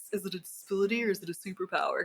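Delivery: put-on bro-dude voice, a bit dumb. Describing a debate in ADHD communities, speaker voices the question in a bro voice. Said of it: "That's my bro voice".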